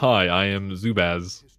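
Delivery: low-pitched voice. Introducing himself when asked to: deep voice. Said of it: "What's this deep voice?".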